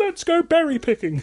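put-on very high kids'-show puppet voice. Playing out a hypothetical dater's plans, in a Sesame Street voice. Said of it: "Why did I do it in a Sesame Street voice?".

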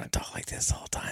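whispering voice. Podcast host opening an episode, announcing they will talk this way throughout, whispering. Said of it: "talk in whisper voice the whole time".

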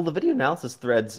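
voice breaking mid-phrase, cracking up high. Answering an interviewer's question, voice cracking. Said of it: "voice crack".

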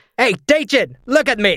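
loud shouting. Playing Squash, shouting across the room at Dajin: shouting across the room. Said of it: "Squash is gonna shout across the room".

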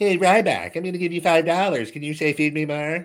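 tiny, high little puppet voice chatter. Imitating a viewer who offers five dollars for a line, little puppet voice. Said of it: "just a little voice puppet".

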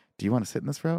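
hushed, whispered delivery. Retelling how a friend asked about seats: imitating Joey whispering. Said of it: "I hear Joey whisper".

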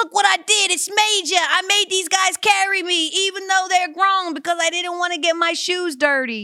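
proud, boastful, very high, faintly Australian voice. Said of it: "[name], Australian now".

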